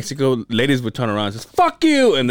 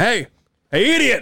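mock hollering, loud, high call-out; 8 semitones higher than usual. Retelling how a coworker calls out to be heard: imitating Chip calling out loudly. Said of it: "Chip will make you hear him".

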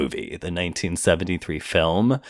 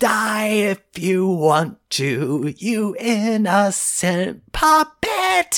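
mock over-the-top scream, higher, louder, slower; 4 dB louder than usual. Describing the end of an original recording, imitating his over-the-top scream. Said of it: "he screams like".

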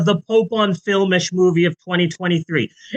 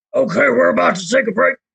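roughened, rough, creaky talk-radio host voice; 4 semitones higher than usual. Imitating Alex Jones on his show: Alex Jones impression. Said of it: "Alex Jones on his show".

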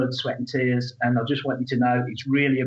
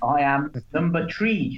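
thick, broad, exaggerated put-on Irish brogue; 3 semitones higher than usual. Giving his membership number to his co-hosts, in an exaggerated irish accent. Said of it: "in my best stdd accent".

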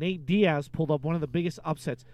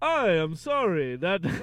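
clumsy, bad, put-on Russian accent. Urged to just try it anyway: bad russian accent. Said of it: "I can't do Russian".

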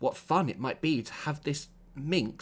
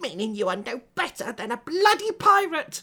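words spat out hard, loud and rising; 10 semitones higher, 6 dB louder than usual. Narrator voicing Hesper answering Marco: spat out. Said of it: "Hesper spat".

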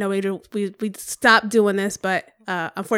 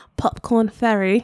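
put-on fake British accent. Saying the episode's guest name after a slip: put-on british accent. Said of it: "She British again".

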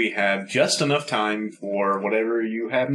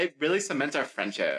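usual speaking voice

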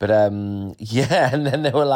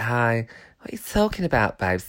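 exaggerated put-on lisp; 3 semitones lower, 4 dB quieter than usual.

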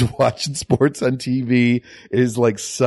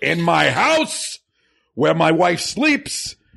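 put-on celebrity voice, swooping, pitched up, wide high swings; 5 semitones higher than usual. Showing how he always quotes a line: Al Pacino impression. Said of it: "when I want to do a Pacino impression".

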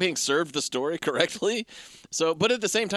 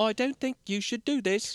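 put-on English-accented robot voice, higher pitch; 6 semitones higher than usual. Retelling a film scene, quoting the robot assistant: imitating an English robot voice. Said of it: "an English robot voice".

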